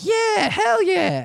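very high-pitched put-on voice. Retelling own reply to a party invite: high-pitched South Park voice. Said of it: "the high-pitched South Park voice".

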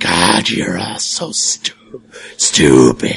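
gravelly hissing voice. Game narrator voicing something behind the closed door, gravelly hissing voice. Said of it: "a gravelly sort of hissing voice going like".

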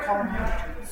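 ordinary talk, nothing marked

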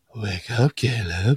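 acted-out alluring, seductive, sultry come-hither voice. Retelling how a character says a line to Caleb, mock-seductive. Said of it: "way more, like, seductive".

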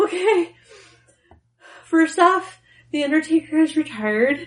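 put-on high, tearful crying through the words. Speaker retelling what they told a man who rushed over, retelling crying speech. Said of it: "and I'm crying".

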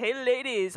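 put-on creepy, creeper voice. Reading out a message from David, greeting in a creepy voice. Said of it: "I'm reading that with a creeper voice".

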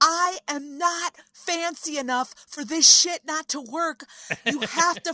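full-on high, loud scream. Retelling being cut off mid-pitch, imitating herself screaming. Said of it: "screaming at nobody in particular".

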